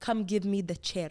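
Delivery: put-on East African highland accent. Retelling how they talked in elementary school, thick Habesha accent. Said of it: "like a thick Habesha accent".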